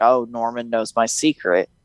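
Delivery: ordinary delivery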